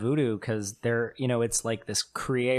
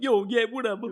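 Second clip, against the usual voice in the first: put-on New York accent, higher pitch; 11 semitones higher than usual. Mocking how a movie made chicago characters sound: mock new york accent. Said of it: "made us sound like we're all from New York".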